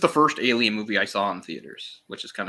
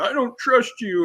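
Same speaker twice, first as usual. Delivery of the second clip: high, whiny, pouting voice, pitched way up; 13 semitones higher than usual. Mocking an actress's character scowling at Ripley: imitating Winona Ryder scowling. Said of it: "she's scowling at Ripley, saying".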